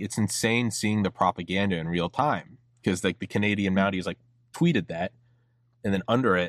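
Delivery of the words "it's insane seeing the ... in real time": ordinary talk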